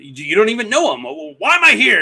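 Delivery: put-on very high, rising, impatient angry outburst. Retelling how Luke loses patience and stands up: imitating Luke angrily. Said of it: "And just stands up all mad".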